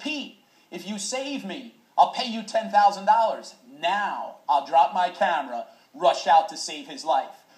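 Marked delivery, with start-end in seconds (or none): 0.0-3.5 high, loud scream. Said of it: "he screams out".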